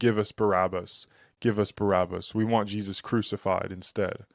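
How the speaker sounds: ordinary delivery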